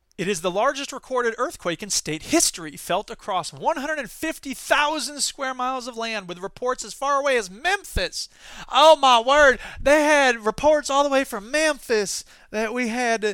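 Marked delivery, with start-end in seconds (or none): 8.7-13.4 put-on Southern accent. Host reading news of a Kansas earthquake, in a put-on Southern accent. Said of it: "I'm doing my dear South impression".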